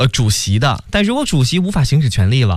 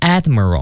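admiral with stress on first syllable ad-. Teaching English word stress: stress on first syllable of admiral. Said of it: "它的重音呢放在前面了".

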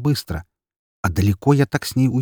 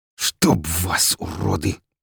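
low hiss through pain; 4 semitones lower than usual. Stung in the face by splinters from a bullet, the narrator cries out, hissing in pain. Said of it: "прошипел я от боли".

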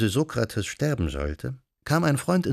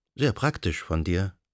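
ordinary delivery

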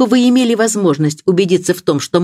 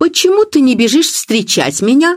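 cross, angry, pitched-up exclaiming voice; 8 semitones higher than usual. Narrator reads a woman flinging open the door at a man: angry exclamation. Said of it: "сердитым голосом воскликнула".

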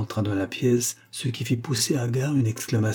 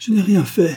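very high-pitched, loud, terrified outcry; 9 semitones higher, 8 dB louder than usual. A terrified woman, accused of murder, answers her accuser with a terrified exclamation. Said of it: "s'exclama la négresse terrifiée".

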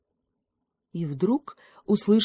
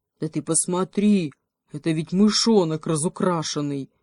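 ordinary delivery

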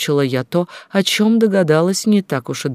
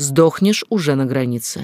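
ordinary delivery, nothing marked

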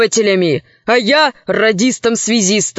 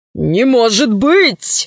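sudden exclamation, crying out. Foka Grant responds to what is said about a slave's parents, exclaiming. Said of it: "воскликнул Фока Грант".

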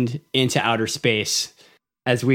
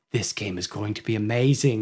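put-on British accent, lower and quieter; 3 semitones lower, 5 dB quieter than usual. Describing how the No Man's Sky developer hyped his game: Sean Murray British accent. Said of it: "He's got this like British accent".

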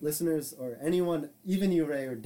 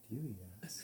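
quiet, secretive, hushed half-whisper, barely audible; 6 semitones lower, 16 dB quieter than usual. Acting out a friend who stops a normal conversation: acting out a quiet half-whisper. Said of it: "they whisper quietly".

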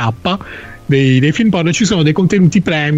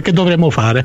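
usual speaking voice

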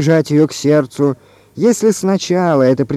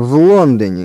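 contemptuous mutter through gritted teeth, much lower pitch; 4 semitones lower than usual. Answering another man's question about where it happened, contemptuous, through gritted teeth. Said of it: "презрительно процедил Филин".

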